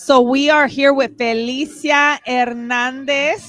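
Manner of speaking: name said in a Latin American Spanish accent.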